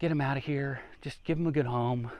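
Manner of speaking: soft, sighing, resigned voice. Retelling what the boss said, with a sigh in his voice. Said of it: "with a sigh in his voice".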